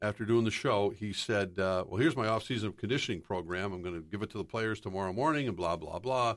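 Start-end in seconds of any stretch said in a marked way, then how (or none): none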